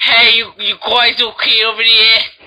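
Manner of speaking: put-on old-timey, nineteen-twenties tough-guy bully voice. Imitating a kayaker from Jaws: 1920s bully voice. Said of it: "Who sounds like a nineteen twenties bully".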